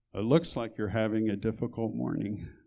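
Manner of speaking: very gentle, soft-spoken tone. Recalling a woman at the hospital comforting them as a patient: retelling very gentle words. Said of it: "said very gently".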